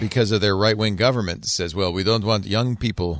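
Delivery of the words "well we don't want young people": fake Italian accent, lower pitched. Voicing Italy's right-wing government to fellow panelists, in a fake Italian accent. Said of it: "what accent was that?".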